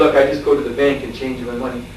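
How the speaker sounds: ordinary delivery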